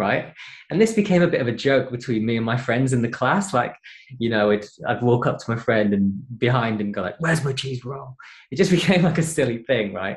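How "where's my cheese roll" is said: mock-angry, aggressive voice, higher pitch. Sneaking up behind a friend as a running class joke, in a mock-aggressive angry voice. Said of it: "in a really aggressive, angry voice".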